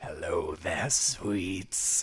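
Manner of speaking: very low, deep, soft growling wolf voice. Game master voices a creature in the brush greeting a player: deep growling voice. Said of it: "You hear a deep growling voice".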